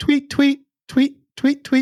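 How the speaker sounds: very high, chirpy, birdlike tweeting.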